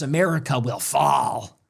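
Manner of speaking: put-on contemptuous tone. Quoting a woman's words, mocking her contemptuous tone. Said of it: "You can hear the contempt".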